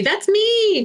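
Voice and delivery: put-on very high little-kid toddler voice. Retelling how a toddler pointed at a picture in a book: imitating a toddler voice. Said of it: "in like her toddler voice".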